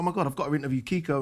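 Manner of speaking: plain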